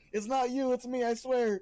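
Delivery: loud, very high-pitched, drawn-out shout. Speaking in character as someone walks out the door: shouting out loud. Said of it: "I'm shouting that out loud".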